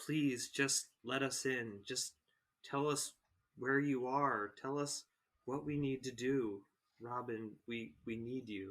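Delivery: hushed half-whisper. Casting a message spell, in character, pleading with Robin to answer: half-whispering in character. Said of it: "and I whisper to him".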